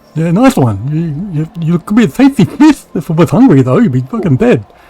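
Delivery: loud, silly, hammed-up creature voice. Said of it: "his son's gonna hear that voice".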